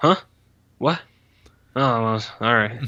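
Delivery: mumbly, dismissive delivery. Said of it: "really mumbly and, like, dismissive".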